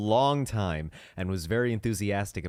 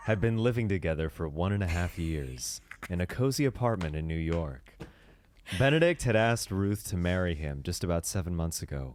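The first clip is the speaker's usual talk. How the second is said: put-on seductive, sensual, rumbling voice; 4 semitones lower than usual. Reading a friend's fan fiction aloud as requested: put-on sensual rumbly voice. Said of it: "a sensual fan fiction voice".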